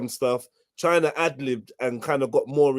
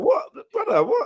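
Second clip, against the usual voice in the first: put-on shocked reaction, higher pitch. Imitating someone's reaction during a heated argument: imitating someone in shock. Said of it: "man's probably in a bit of shock".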